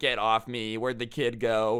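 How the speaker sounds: plain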